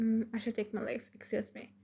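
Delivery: plain reading voice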